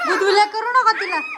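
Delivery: high, loud, scolding call.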